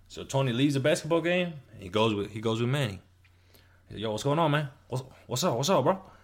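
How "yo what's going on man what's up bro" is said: put-on Cuban accent, pitched higher. Retelling a story, the speaker voices Tony greeting Manny, in Tony's Cuban accent. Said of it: "Because he has like a Cuban accent".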